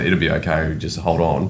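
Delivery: ordinary delivery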